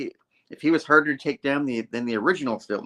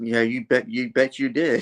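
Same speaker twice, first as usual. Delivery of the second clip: mock-snippy woman voice, lower and slower; 2 semitones lower than usual. Retelling a woman's reply to a late man, imitating a snippy woman. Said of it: "she's all like snippy".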